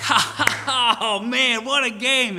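very high, loud, drawn-out gleeful cheer and laugh. Retelling how a partner reacted to losing the final game: imitating Brother Tim, excited. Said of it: "he's all excited".

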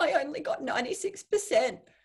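put-on high, tearful sobbing through the words. Retelling getting an exam back, speaker imitates the girl who burst into tears: imitating someone crying. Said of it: "the girl next to me burst into tears".

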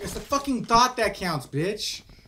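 slightly angry. Replying after a teammate says they already died: a little mad. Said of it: "I'm a little mad".

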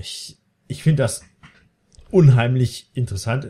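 tongue-in-cheek, ironic, sarcastic tone. Commenting after a line of dialogue, sarcastic. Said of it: "ironisch, sarkastisch ausgedrückt".

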